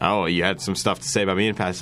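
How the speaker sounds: normal talking voice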